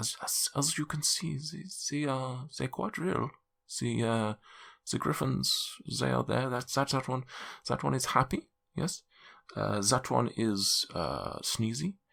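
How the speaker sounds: high-pitched, hushed half-whisper. Narrating a game scene, the speaker voices a man half-whispering to the players. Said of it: "he whispers".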